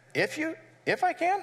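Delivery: acted, mock-wounded tone, sounding slightly hurt. Voicing a reply the way the speaker hears it: acting a little hurt. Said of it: "I almost hear Jesus kind of being a little hurt".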